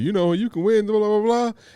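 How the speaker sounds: game show announcer voice, very high-pitched. Describing a game show on TV: imitating a game show announcer. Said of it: "they always got the announcer".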